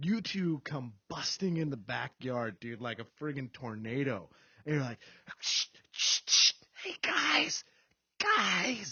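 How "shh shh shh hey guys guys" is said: put-on drunken stage whisper, overly loud. Recalling friends busting into the backyard, loud drunken whisper. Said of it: "doing that drunk quiet voice, you know, where you're whispering louder than Billy Mays".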